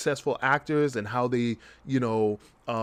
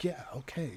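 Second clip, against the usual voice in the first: mock overly cool manner, quieter; 12 dB quieter than usual. Imitating an actor on a reenactment show who acts too cool: imitating a too-cool actor. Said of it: "tries to act too cool for school".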